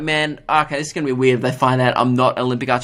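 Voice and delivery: ordinary talk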